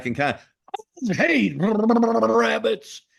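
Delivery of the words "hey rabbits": very high, rough, throat-scraping cowboy growl. Talking about which cartoon voices strain the throat, doing Yosemite Sam voice. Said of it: "Yosemite's tough on the throat".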